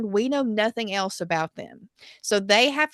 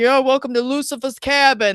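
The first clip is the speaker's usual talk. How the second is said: put-on loud, laid-on New York accent; 4 semitones higher, 6 dB louder than usual. Retelling Max's joke while the characters drink and joke around, Max's New York accent. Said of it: "like talking like a New Yorker".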